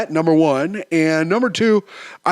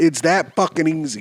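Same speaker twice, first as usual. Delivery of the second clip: usual speaking voice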